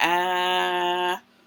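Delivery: ah held on and on, long, drawn out. Showing the short A sound held for a long time, long held ah sound. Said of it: "I can say the short A sound ah for a long time".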